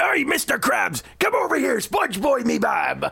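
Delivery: gruff, roughened cartoon pirate voice, very high pitch. After being praised for it, showing how the pirate voice sounds: Mr. Krabs-style pirate voice. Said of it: "my regular pirate voice just happens to sound like".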